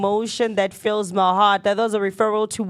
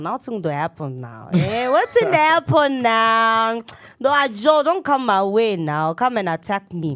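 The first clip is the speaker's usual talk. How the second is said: put-on Nigerian accent with "petri" drawn out. Calling out the action with another speaker, in a Nigerian accent. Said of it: "was calling it with a Nigerian accent now".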